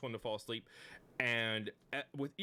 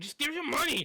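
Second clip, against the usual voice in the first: very high, impatient, raised voice; 8 dB louder than usual. Playing a robber with a short bow demanding the party's money, getting impatient. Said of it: "He's kind of like getting impatient".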